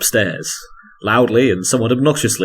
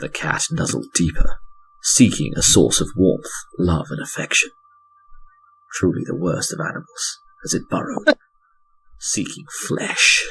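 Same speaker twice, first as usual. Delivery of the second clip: mock-sinister, creepy horror narrator voice; 3 semitones lower, 3 dB quieter than usual. Narrating a cat nuzzling as a horror story; mock-sinister horror narration. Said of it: "Very sinister thing".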